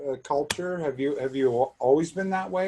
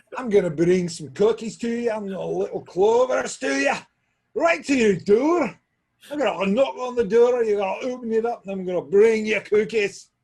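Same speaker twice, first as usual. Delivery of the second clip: loud, put-on Scottish accent throughout; 9 semitones higher, 6 dB louder than usual. Joking around on camera, fake scottish accent. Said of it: "You do a good Scottish though".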